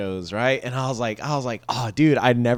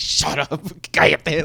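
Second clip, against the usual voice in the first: put-on angry snapping outburst, higher pitch; 4 semitones higher than usual. Retelling how dad reacts when mom teases him: imitating dad angrily snapping. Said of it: "my dad just gets so mad".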